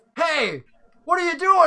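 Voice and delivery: high, loud startled shout. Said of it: "the guy's like".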